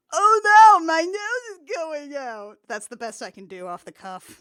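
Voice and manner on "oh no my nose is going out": very loud, very slow, high, drawn-out cartoon reindeer voice. Discussing the story with co-hosts, trying an off-the-cuff Rudolph impression. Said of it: "That's your Rudolph impression?".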